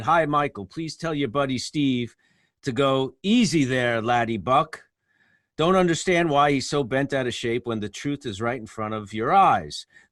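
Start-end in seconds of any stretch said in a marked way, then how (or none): none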